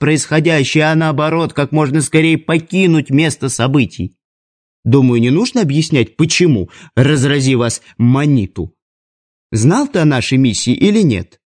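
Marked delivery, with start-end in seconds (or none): none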